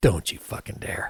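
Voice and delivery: hushed whisper spoken right into the ear. Speaker retells what a man whispered in their ear, retelling a whisper. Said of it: "he just whispers in my ear".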